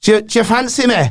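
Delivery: put-on Manchester accent. Trying out flirting in a put-on Manchester accent. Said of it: "Manchestery sounds quite nice".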